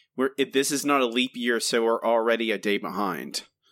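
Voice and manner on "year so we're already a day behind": ordinary talk, nothing marked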